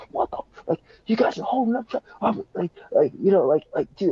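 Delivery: high, angry yell with words tumbling out. A driver rolls down his window at two arguing strangers, retelling his yelling. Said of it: "he starts yelling at them like".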